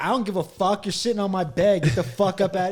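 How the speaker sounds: mock obnoxious, jerkish, rude dismissive outburst. Retelling how a friend rudely ordered a guest off his bed: imitating Tay Meek being an asshole. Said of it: "he just started being an asshole".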